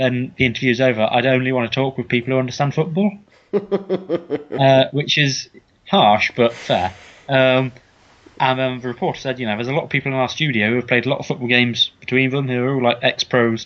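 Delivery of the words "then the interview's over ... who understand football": usual speaking voice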